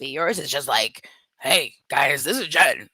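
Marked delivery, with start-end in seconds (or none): 1.4-2.8 rough, raspy, butch, manly voice. Comparing raspy voices after yours is criticized, show how hers sounds, mocking Jen's manly raspy voice. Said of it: "You have a manly raspy voice".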